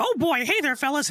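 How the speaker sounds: squeaky, high-pitched cartoon voice. Showing the voice they would do: Mickey Mouse voice. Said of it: "I do the Mickey voice".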